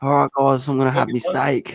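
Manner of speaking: shy, timid, low-key voice. Retelling an impression of Hookie's food reviews: imitating Hookie's food reviews. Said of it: "He did an impression of, uh, Hookie is doing his food reviews".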